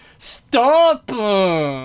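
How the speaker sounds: loud, put-on angry grunt with drawn-out uh. Speaker imitates other kids from childhood, mock-angry 'uh' at word end. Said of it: "the end of their words sometimes when they're mad. Like".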